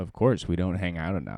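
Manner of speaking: ordinary delivery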